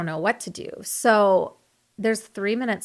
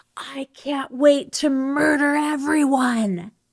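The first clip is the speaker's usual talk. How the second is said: acted, high, drawn-out scream at top of lungs; 7 semitones higher, 4 dB louder than usual. Retelling a man storming out of a bank: imitating someone screaming at full volume. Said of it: "he screams at the top of his lungs".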